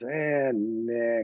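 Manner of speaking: put-on apathetic monotone voice. Answering a request to impersonate his old coach: Bill Belichick impression. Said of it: "Can you do an impersonation of Bill Belichick?".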